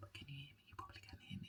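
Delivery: very quiet, breathy, barely audible whisper. Speaker addressing listeners while talking through their plans, whispering. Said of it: "I don't know why I'm whispering".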